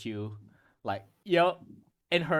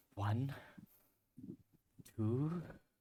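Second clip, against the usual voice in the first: soft, quiet muttering under the breath, quieter; 11 dB quieter than usual. Voicing a character counting softly under her breath. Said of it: "softly under her breath".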